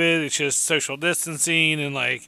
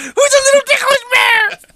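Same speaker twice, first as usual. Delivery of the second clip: put-on very high, very loud, swooping cutesy baby talk; 8 dB louder than usual. Explaining how to tickle a bear, the speaker talks to it in cutesy baby-talk voice. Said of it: "use your voice like that".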